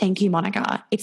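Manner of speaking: normal talking voice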